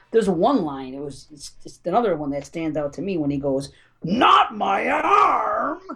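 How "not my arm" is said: high-pitched cartoon-cowboy voice. Quoting a bad movie line from Freddy Krueger: Freddy Krueger sounding like Yosemite Sam. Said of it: "he sounds like fucking Yosemite Sam".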